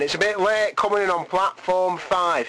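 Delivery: station platform train announcer voice. A host introducing music tracks jokes about his delivery, in a train announcer voice. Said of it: "I sound like some sort of train announcer".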